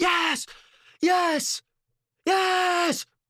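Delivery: very high, loud, excited screaming at full voice. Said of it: "I can hear [name] from a mile away screaming".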